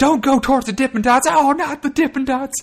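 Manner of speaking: very high, very loud announcer shriek. Recapping a wrestling brawl outside the ring, doing a JR screaming impression. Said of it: "JR starts screaming".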